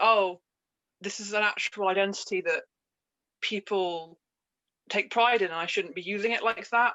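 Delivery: ordinary delivery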